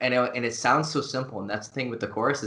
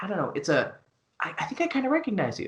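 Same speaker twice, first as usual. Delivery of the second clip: high, swooping, hesitant, half-recognizing tone; 8 semitones higher than usual. Demonstrating how to open a conversation with a woman, in a tone of vague recognition. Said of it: "those vocal tonalities".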